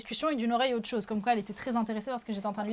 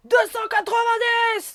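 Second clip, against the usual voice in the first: very high, shrill, very loud full-lung scream; 12 semitones higher, 9 dB louder than usual. Retelling an auction where someone in the group stands and screams a bid: retelling a shouted bid. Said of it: "Elle se met à hurler comme ça".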